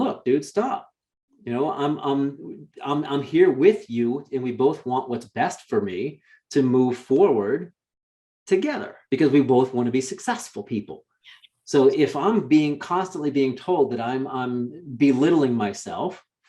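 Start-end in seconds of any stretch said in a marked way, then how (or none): none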